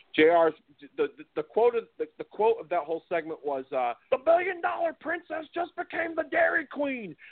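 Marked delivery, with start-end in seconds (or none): 4.1-7.0 very high, pitched-up wrestling commentator call. Quoting a commentator's famous call from a segment: J R impression. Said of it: "do my best J R impression".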